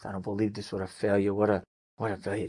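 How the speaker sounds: low mutter under the breath. Retelling a wife's reaction all friday night: imitating muttering under breath. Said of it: "muttering under her breath".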